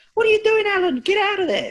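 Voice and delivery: very high-pitched, loud, swooping shout. Imitating a commentator yelling at a fighter: high-pitched Joe Rogan impression. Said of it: "in that high pitched voice".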